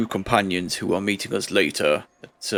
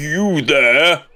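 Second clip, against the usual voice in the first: big, loud, booming call; 7 semitones higher, 6 dB louder than usual. Calling out from behind someone boarding up a place, in a booming voice. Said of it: "jumps on the spot at this booming voice".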